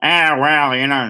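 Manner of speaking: poorly done Brooklyn accent. Speaker describes a surly cartoon bot, in a really horrible brooklyn accent. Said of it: "I'm doing a really horrible Brooklyn accent".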